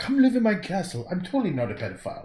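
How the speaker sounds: put-on very plummy upper-class British accent, sing-song, swooping high. Playing a patron of the arts inviting someone to his castle, Alan Detweiler, very upper class British accent. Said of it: "he had that very upper class British accent".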